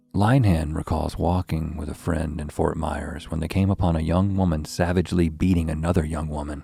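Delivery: dramatic narration. Showing another speaker how the narration should go, more dramatic narration. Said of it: "like this is dramatic".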